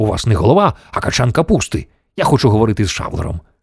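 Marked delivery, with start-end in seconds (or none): none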